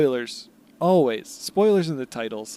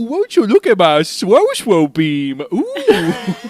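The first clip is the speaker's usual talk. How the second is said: put-on high, loud, swooping, goofy overgrown-baby voice; 5 semitones higher, 7 dB louder than usual. Co-hosts riffing, one launches into a bit: Adam Sandler baby voice. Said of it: "so good at baby voice Adam Sandler".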